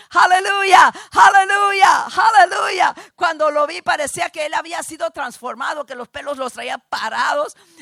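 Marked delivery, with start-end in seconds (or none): 0.2-3.0 very loud, high, exultant repeated shouts. Retelling how a calm little doctor threw open the door, retelling a shout. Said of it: "empieza a gritar".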